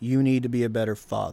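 put-on grown woman voice. Retelling what the girlfriend said to him: imitating a grown woman voice. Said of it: "she said it with a grown woman voice".

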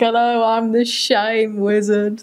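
very slow character voice, every word drawn out. Describing a show character who pops up when kids misbehave: Shame Wizard voice. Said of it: "That's literally how he says it".

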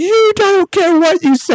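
mock very high-pitched, heated screaming. Retelling an argument after flipping a canoe: retelling own yelling. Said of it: "we were screaming at each other".

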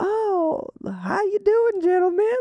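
put-on Southern belle accent. Retelling how she'd talk when guests came over, in a Southern belle accent. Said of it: "She'd get this like Southern Belle".

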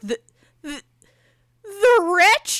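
play-acted frightened stammering. Retelling how the booth attendant answered the movie choice: imitating a terrified question. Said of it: "Like, terrified".

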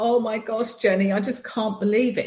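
high-pitched, sobbing through the words, crying. Recounting a friend's phone call, imitating a friend sobbing. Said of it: "she was properly sobbing".

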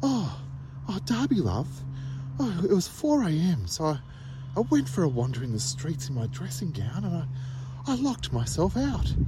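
high, swooping, put-on posh mum voice. Showing how a written story would sound if read as Mum, imitating Mum's posh voice. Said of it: "If I read it in Mum's voice".

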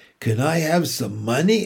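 ordinary delivery, nothing marked

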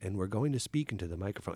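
low, calm, quiet public-radio-style voice. Showing how the characters in a gray, bleak film talk: monotone NPR-style voice. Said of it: "And they talk like this".

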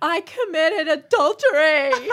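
booming, very loud, high-pitched voice. Acting out a young girl confessing to the priest, in a really loud voice. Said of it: "she's got this really loud voice".

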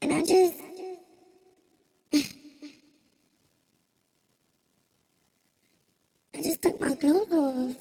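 crying while talking. Retelling a painful night to listeners, crying while talking. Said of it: "I'm crying on my mic".

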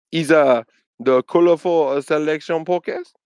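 put-on failed Korean accent, sounds French. Podcast host complaining about a man re-uploading their show in Korea: bad Korean accent. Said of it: "Why'd you say it in French?".

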